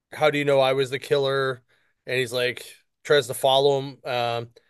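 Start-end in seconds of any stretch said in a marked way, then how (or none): none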